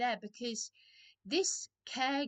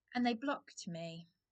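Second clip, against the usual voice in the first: plain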